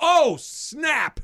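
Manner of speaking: very high, full-throated, top-of-the-lungs yell. Recounting reacting to an unbelievable catch, retelling a top-of-lungs yell. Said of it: "I yell at the top of my lungs".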